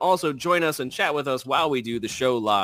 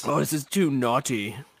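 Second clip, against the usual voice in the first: playful put-on British accent. Joking with co-hosts about naughty words, speaker slips into a mock British accent. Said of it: "I like how you guys turned British".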